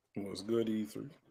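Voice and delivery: barely audible, very quiet, low-energy voice. Greeting the host on a call-in stream: quiet, low energy. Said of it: "I can barely hear you".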